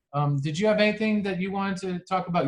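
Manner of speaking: ordinary delivery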